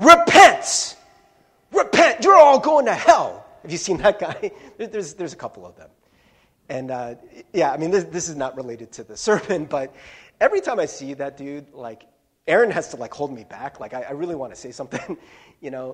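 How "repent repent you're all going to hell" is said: very loud, high street preacher yelling voice. Describing a campus preacher who yells at people, imitating a yelling preacher. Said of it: "just yells at people".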